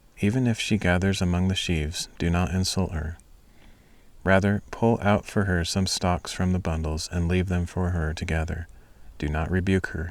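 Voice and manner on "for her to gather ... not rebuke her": ordinary delivery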